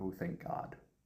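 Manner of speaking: muddled, soft mumble under the breath. Voicing a character who mutters in relief: muttering under her breath. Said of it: "muddle under her breath".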